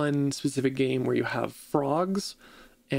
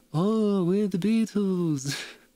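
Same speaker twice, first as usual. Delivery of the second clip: put-on high, half-stoned, very slow drawl; 6 semitones higher than usual. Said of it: "semi-stone sounding like".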